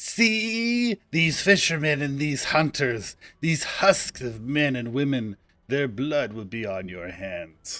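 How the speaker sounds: angry, swooping cat-like hiss, drawn-out see. A hostile game character speaks to the player: hissing like an angry cat. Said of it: "I really like her work. / uh, [name] hisses at you like an angry cat".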